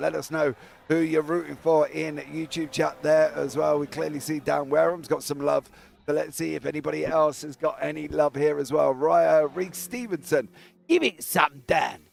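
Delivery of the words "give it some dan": playful voice, in character. Reading out a viewer's chat comment in an impression of them. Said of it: "That was my best impression of you".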